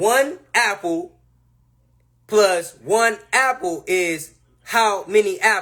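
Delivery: very slow, condescending, over-explaining tone. Retelling a mom reading a math question to a kid: imitating mom reading very slowly. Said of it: "read you that fucking question like you slow as hell".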